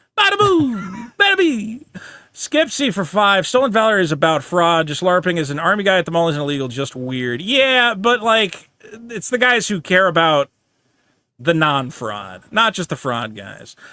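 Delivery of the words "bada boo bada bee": very high, dumb, dopey put-on Italian accent. Between listing names and numbers, the speaker switches to a dopey Italian voice.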